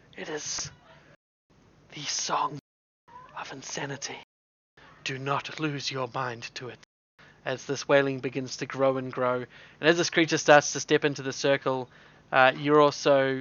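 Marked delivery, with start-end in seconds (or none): 0.2-6.8 soft, hushed whisper under the breath. Game narrator voicing the character Navad to the players, Navad whispering. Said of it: "you hear Navad whisper".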